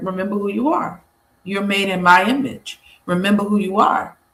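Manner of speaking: ordinary talk, nothing marked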